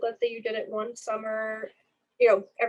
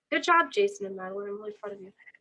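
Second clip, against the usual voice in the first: dry, sarcastic mock praise. Praising students for copying the transcript name exactly: sarcastic. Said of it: "I'm being really sarcastic today".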